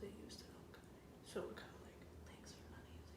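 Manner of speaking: soft, hushed whisper.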